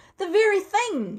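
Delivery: shrill, sudden, very high and loud exclamation. A seller suddenly catches sight of something behind his customer: exclaiming. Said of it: "he exclaimed".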